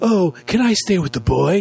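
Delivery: high British lilt. Retelling a film scene, speaking as Bumblebee: British accent. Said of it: "He has a British accent for some reason".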